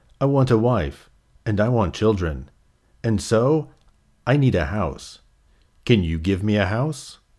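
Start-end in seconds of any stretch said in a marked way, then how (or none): none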